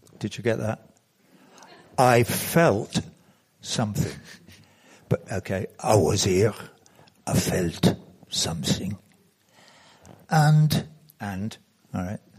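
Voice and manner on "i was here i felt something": odd, weird, low put-on French accent. Speaker retelling what they said back then, in a weird french accent. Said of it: "I said it in a weird French accent".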